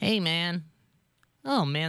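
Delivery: failed cartoon voice, high, slow and drawn out. Trying out Simpsons voices: failed Bart Simpson voice. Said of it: "that doesn't sound anything like Bart Simpson".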